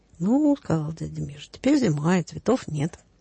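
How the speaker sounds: ordinary delivery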